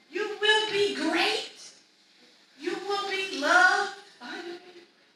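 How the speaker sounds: yelling and whispering at once. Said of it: "yelling and whispering at the same time".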